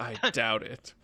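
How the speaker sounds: low mutter under the breath, to himself. Speaker retells what a man said under his breath, mimicking the mutter. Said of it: "Under his breath".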